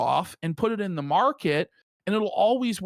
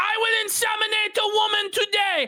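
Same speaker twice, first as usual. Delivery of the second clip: put-on scream, higher; 14 semitones higher than usual. Retelling how a man in a clip started screaming: imitating someone screaming. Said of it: "when he starts screaming".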